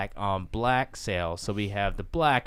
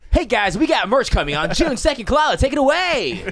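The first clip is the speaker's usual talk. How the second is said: pumped-up hype, very loud and very high; 11 dB louder than usual. Asked to sound more enthusiastic, announcing the merch date again: more enthusiastic announcement. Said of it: "make it sound more enthusiastic".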